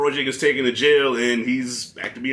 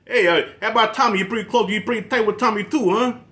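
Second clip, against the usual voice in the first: put-on Philly Italian accent, pitched up; 9 semitones higher than usual. Reviewing a movie, quoting the son who suddenly develops a philly italian accent. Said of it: "develops this um this Philly Italian accent".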